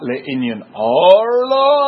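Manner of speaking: stressed name, drawn out slow and loud.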